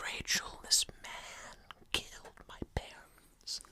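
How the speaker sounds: slow, hushed, barely audible whisper. Acting out a character's line the way he delivers it, in a hushed whisper. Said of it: "He does actually kind of deliver it like that as well, doesn't he? Yeah. Why does he whisper".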